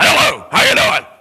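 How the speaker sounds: loud, rough, mean witch voice. Retelling a rough woman greeting a man each week, in an Ursula voice. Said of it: "She like Ursula or something".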